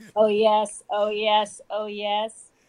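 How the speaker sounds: put-on robotic, sexy voice. Asked a question by the hosts, the assistant answers: sexy Siri voice. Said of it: "That was a funny robotic sex voice".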